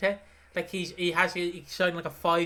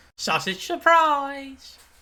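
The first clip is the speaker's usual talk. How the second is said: high, loud, pitched-up belted call; 8 semitones higher, 7 dB louder than usual. Showing how the character says her line: imitating Jean's delivery. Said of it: "he didn't say it like she says it".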